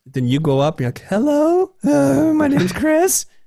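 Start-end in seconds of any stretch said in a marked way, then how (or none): 1.1-3.2 nervous voice, cracking way up high. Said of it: "and then your voice cracks".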